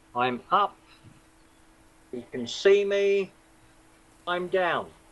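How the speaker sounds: slow, measured rhythm with even pauses.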